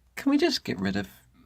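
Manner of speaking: voice breaking very high and squeaky. Explaining the four pronunciations of a phonogram, with a voice crack. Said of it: "That was a bit of a voice crack".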